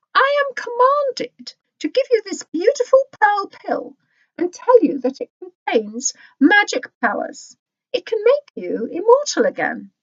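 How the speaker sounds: very high, sweet, gracious empress voice. Reading a story aloud, voicing the Empress as she addresses him, sweet empress voice. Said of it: "So he sent [name]'s wife to give [name] a reward. On seeing the Empress in her golden palanquin, / On seeing the Empress in her golden palanquin, [name] bowed low with his face in the dirt. "[name], t".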